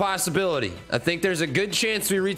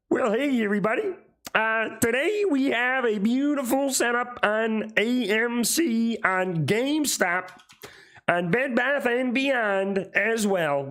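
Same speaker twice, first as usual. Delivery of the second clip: put-on cartoon frog puppet voice; 4 semitones higher than usual. Doing a requested Kermit the Frog voice while going over stock charts: Kermit the Frog voice. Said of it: "I don't know how good I am at Hermit the Frog".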